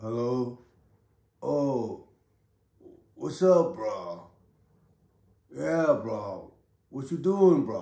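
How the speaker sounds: put-on, very slow, groggy just-woke-up drawl. Retelling a phone call with a friend who sounded just woken: imitating Bryson's groggy just-woke-up voice. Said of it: "his voice was groggy, like he just woke up".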